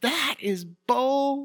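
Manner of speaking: put-on very high shrill scream, "bull" drawn out. Recounting yelling at a call while sitting with athletes' families, retelling a scream. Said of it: "I screamed at the top of my lungs".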